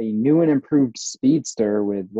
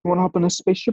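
raised-pitch rock creature voice; 6 semitones higher than usual. Speaker arguing for the best MCU character, doing a Korg impression. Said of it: "It's my Korg impression".

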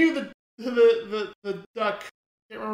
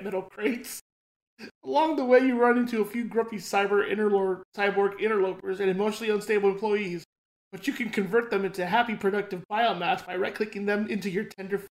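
ordinary delivery

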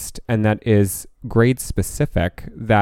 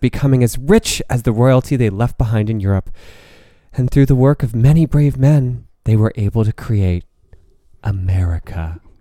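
put-on glowing, idyllic storybook narration; 2 semitones higher, 4 dB louder than usual. Mocking a glowing history account of america: put-on idyllic, beautiful narration. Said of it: "make it sound so idyllic and beautiful".

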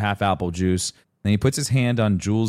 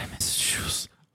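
mock mumble, quieter and slower. Retelling bedtime with a crying boy, imitating him mumbling. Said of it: "And he mumbles".

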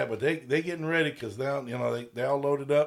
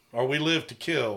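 normal talking voice

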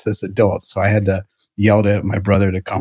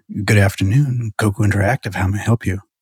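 very sexy, put-on sultry phone voice. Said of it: "I was trying to be very sultry".

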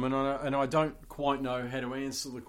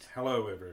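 rich announcer voice, lower; 4 semitones lower than usual. Greeting everyone as a guest on the podcast: rich radio voice. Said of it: "there's a rich voice".

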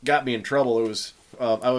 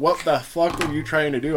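normal talking voice

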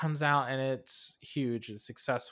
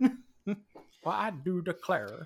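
put-on cartoon rooster voice, swooping, pitched up; 5 semitones higher than usual. Recalling a film character's way of talking, in a Foghorn Leghorn impression. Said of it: "talking like Foghorn Leghorn".

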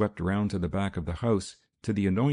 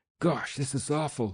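groaning in pain, pitched up; 6 semitones higher than usual. A snake-bitten man in great pain, rocking himself, groaning in pain. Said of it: "he groaned".

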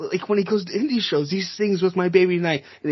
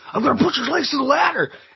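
very high-pitched dumb-jock voice with meathead energy; 9 semitones higher than usual. Retelling a wrestler's ladder move in a match: imitating Cody Rhodes, dumb jock energy. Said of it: "the dumbest jock energy I've ever seen".

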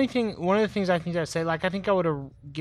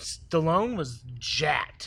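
usual speaking voice

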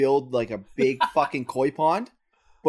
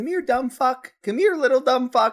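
sugary, very high, cheery voice; 10 semitones higher, 3 dB louder than usual. Retelling how they used to call their dog: imitating calling a dog in a happy tone. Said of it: "because of the tone that I'm saying it in".

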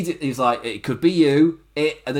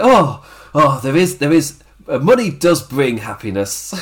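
mock gleeful, jolly gloating tone, spoken louder; 6 dB louder than usual. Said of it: "he's all jolly and just skips away".

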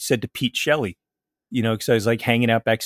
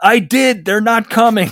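very loud, high, booming yell; 11 semitones higher, 9 dB louder than usual. Retelling the club's stage manager, told to call the police, retelling a yell back. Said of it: "the guy yells back".

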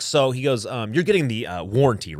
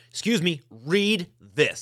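put-on very loud voice, higher; 7 semitones higher than usual. Retelling confronting a manager at the dealership: retelling saying it very loud. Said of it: "very loud".

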